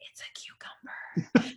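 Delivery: hushed whisper, all breath. Retelling one's own whispered reply: imitating own whisper. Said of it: "I whispered back".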